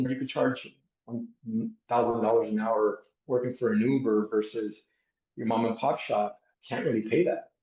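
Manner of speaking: ordinary talk, nothing marked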